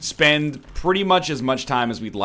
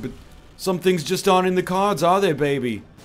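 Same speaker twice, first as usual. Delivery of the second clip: put-on swinging British spy voice, higher pitch; 6 semitones higher than usual. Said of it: "It's my Austin Powers impression".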